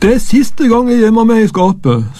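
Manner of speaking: high, groaning whine. Reading a story: a stiff boy crawls out of the cupboard, groaning. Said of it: "stønnet han".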